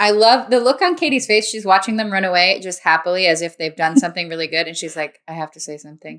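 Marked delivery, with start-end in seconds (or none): 5.3-6.2 much softer, kept quiet as if said to herself. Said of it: "not even saying that to anyone but herself".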